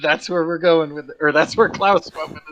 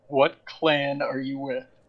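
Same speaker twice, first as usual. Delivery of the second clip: whispering, much quieter than surrounding speech; 3 semitones lower, 8 dB quieter than usual. Telling a story, quoting a character's question: retelling a whisper. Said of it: "and whispers".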